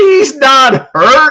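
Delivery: very high, slow, loud mocking dismissive tone.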